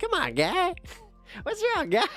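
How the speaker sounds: very high, sing-song, swooping voice. Doing an impression of the speaker's own dad: impression of my dad. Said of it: "if I had to do an impression for my dad".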